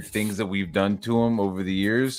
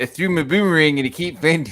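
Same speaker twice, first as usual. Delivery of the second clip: put-on New Zealand accent, pitched up; 8 semitones higher, 4 dB louder than usual. Telling a joke in a put-on accent, as others remark: put-on New Zealand accent. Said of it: "you're doing more the Kiwi accent".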